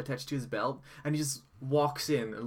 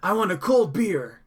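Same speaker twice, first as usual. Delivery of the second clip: put-on very loud, slow, high, angry cranky old man bellow; 7 semitones higher, 11 dB louder than usual. Retelling an old man slamming his fist and demanding beer: imitating an old man shouting. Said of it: "smashes his fist down on the desk and goes".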